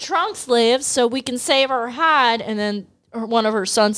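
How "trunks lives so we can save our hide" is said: put-on angry Southern accent. Retelling what the angry Southern mom says: put-on angry Southern accent. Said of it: "she also has a Southern accent".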